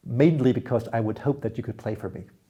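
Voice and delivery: ordinary delivery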